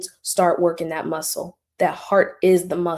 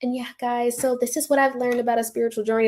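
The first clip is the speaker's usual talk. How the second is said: put-on higher, younger, babyish, upbeat, optimistic voice; 5 semitones higher than usual. Imitating own old video voice, before the voice dropped: own past optimistic voice. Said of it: "I used to be like".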